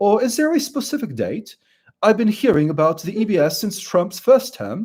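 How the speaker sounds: British accent slipping in. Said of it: "there goes my British altar again".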